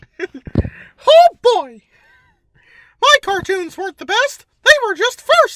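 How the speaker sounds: squeaky voice, high-pitched and loud. Showing the others which voices he can do, Mickey Mouse impression. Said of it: "I could do Mickey Mouse".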